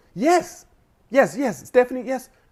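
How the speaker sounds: put-on proper phone voice, high-pitched.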